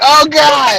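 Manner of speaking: play-acted voice full of tears, distressed. Retelling a phone call to someone in tears: imitating someone in tears. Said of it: "and she's in tears".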